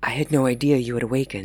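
rushed, pitch dropped. A man picking up dropped utensils speaks to a woman who just woke, in a rush. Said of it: "said Martin in a rush".

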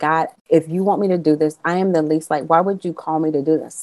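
put-on tearful voice, crying while speaking. Recalling praying alone in the car at seminary, retelling a tearful prayer. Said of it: "And I'm really crying in my car".

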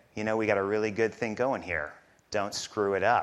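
imitated, put-on whisper. Retelling what the pastor said before the first sermon: imitating a whisper. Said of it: "he leaned over and he whispered to me".

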